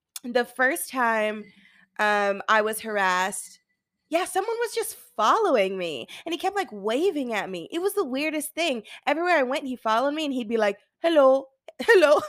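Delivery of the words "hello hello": bad put-on Indian accent, very loud. Recalling a stranger who kept following and waving, in a bad indian accent. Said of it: "that's a bad accent".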